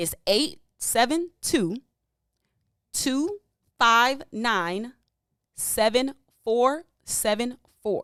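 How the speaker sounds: very slow, deliberate, each number spaced out. Reading out the call-in number for listeners to write down: speaking slowly. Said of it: "I'm gonna say it slower than Maze".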